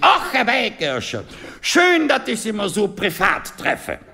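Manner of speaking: put-on high, friendly older gentleman's voice.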